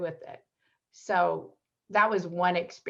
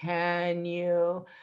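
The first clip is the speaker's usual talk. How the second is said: low, drawn-out mock slow talking. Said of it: "People used to talk real slow to me".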